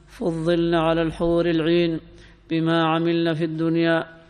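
plain

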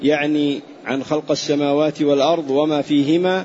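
normal talking voice

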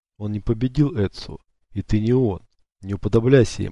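plain

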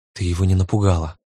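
plain

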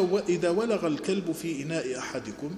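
ordinary delivery

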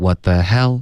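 what the hell with wrong stress on hell.

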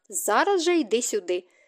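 ordinary talk

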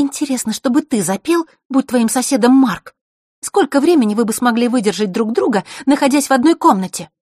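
angry, needling tone. A girl retorts right after a boy sneers at her, angry. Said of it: "Василиса тут же обозлилась".

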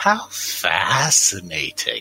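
put-on flabby toad-creature voice, low and swooping. A game master voices a hunched toad-like creature greeting the players: toad-like creature voice. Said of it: "like sort of flabby toad-like creatures. A red one and a blue one. Oh. Red one goes faster. As you walk by, a sort of hunched green form, very similar to them, but with like a big staff, comes and".

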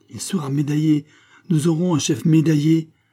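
high, rapturous exclaiming voice. Reading a novel, Claude responds to Pitou's news, exclaiming with rapture. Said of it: "s'écria Claude avec transport".

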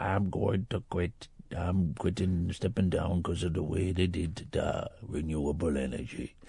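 put-on very low, very quiet old voice. Retelling what you heard him say on the radio, Martin McGuinness impression, sounding really old. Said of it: "he sounds really old".

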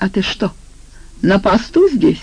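plain reading voice

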